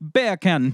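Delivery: quick Jamaican accent, bacon pronounced like beer can. Showing a trick for the word 'bacon': jamaican accent. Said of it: "If you ever want a, a quick Jamaican accent, just say beer can and pretend it's the word bacon".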